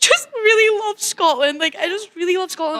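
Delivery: sobbing through tears, very high, crying voice. Recalling the answer given to a friend who asked if they were okay: retelling hysterical crying. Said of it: "I was hysterically crying".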